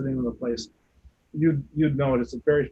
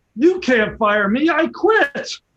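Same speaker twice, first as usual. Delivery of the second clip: shrill, very loud, high-pitched shout; 12 semitones higher, 9 dB louder than usual. Retelling what the speaker said back after a whispered request: retelling a very loud line. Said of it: "I said in a very loud voice".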